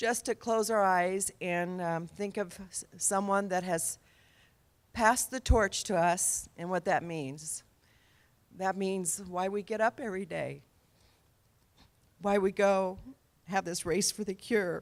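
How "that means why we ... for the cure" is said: voice welling with emotion, moved delivery. Asking the race for the cure crowd to remember someone who passed, getting emotional. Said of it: "I'm getting emotional".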